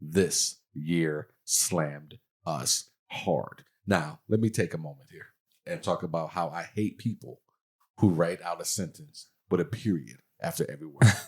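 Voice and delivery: put-on, very slow, heavy angst on each word. Reading aloud a social media post: reading with put-on angst. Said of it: "You definitely read that with some angst".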